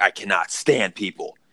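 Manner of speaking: acted-out annoyed, exasperated, fed-up, irritated tone. Retelling what the gas station worker said out loud: imitating someone pissed off. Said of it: "He was all pissed off".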